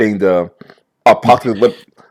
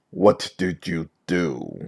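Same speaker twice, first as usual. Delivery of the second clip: very quiet, slow, distorted voice-changer voice; 4 semitones lower, 12 dB quieter than usual. The TV is suddenly interrupted and a voice speaks through it, voice-changer voice. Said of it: "voice changer".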